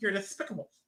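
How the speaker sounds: wacky, high-pitched cartoon duck voice. Joking about a misheard word: Daffy Duck impression. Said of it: "I'd do a Daffy Duck impression".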